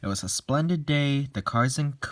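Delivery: ordinary delivery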